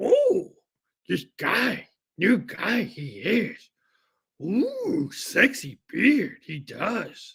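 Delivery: sing-song character voice, pitch swooping up and down. Commenting on a new arrival in a Yoda impression: Yoda voice. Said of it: "I gotta practice my Yoda".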